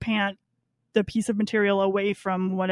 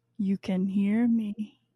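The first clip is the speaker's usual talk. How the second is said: eerie, menacing, creepy little voice; 4 dB quieter than usual. Retelling a character's line to Gordon, imitating a sinister voice. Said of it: "he gets this little sinister voice".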